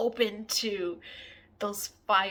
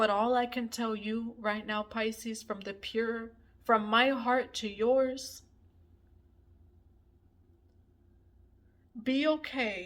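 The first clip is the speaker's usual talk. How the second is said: crying while speaking, tearful. Speaking to Pisces about their spiritual journey, crying while speaking. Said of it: "the reason why I'm crying".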